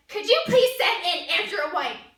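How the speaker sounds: play-acted hard, severe, very harsh tone. Retelling a request someone made in her office: imitating a harsh tone. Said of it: "in a very harsh tone".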